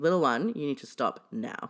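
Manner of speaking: stern, firm tone. Asked to say a line to someone in a stern voice: stern. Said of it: "in a stern voice".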